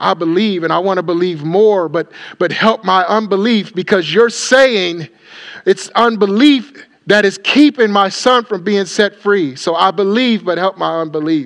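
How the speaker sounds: loud, sincere tone. Acting out a father's words to the Lord: imitating a sincere cry to God. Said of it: "He's crying out to the Lord sincerely".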